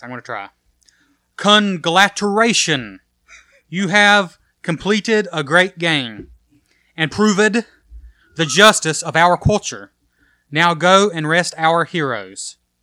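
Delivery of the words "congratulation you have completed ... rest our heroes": very slow, deliberate, drawn-out shouty read. Reading a game's all-caps ending text aloud: mock yelling all-caps text. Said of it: "so I need to yell it".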